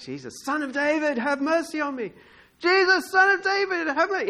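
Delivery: crying out, very high-pitched. Retelling the story, the speaker acts out the blind man yelling to jesus. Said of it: "he can hear him yelling out".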